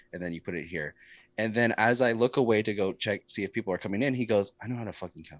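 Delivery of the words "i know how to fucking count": very quiet, muttered under-the-breath mumble. Retelling what a man said while being shown how to count nickels, imitating a mumble. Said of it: "Like he's mumbling".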